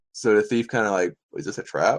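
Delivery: ordinary delivery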